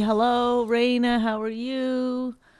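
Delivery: easygoing, chatty, friendly, sociable, unhurried voice. Showing how a chatty friendly question would sound: imitating a chatty friendly greeting. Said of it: "chatting and friendly".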